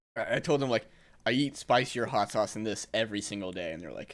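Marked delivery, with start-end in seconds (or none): none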